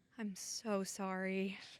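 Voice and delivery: very quiet, low, hushed, funeral-grave voice. Retelling how the speaker greeted a celebrity, with a mock-somber tone. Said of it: "who died?".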